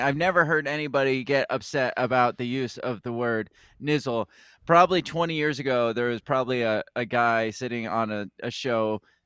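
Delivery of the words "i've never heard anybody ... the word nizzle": plain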